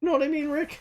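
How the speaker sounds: very high, wavering, unsure-sounding voice. Demonstrating an impression, addressing Rick: Morty voice. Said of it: "you just have to go high pitched and like just wave your voice a little bit".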